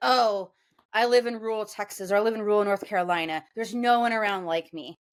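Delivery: ordinary talk, nothing marked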